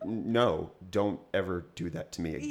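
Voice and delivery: ordinary talk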